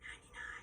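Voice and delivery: whispering. Giving a hearing test, saying a word to be repeated: whispering. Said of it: "I'm going to whisper a two-syllable word".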